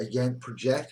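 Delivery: ordinary delivery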